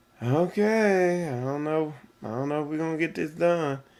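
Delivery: disappointed, flat delivery with a stretched "okay". Illustrating disappointment while discussing emotional tones: disappointed. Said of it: "So disappointment, be like".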